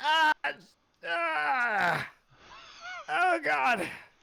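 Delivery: very high, very slow, drawn-out hurt wail. Voicing a creature that fell from an ice wall and is sinking: badly hurt cry. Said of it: "he sounds pretty messed up right now".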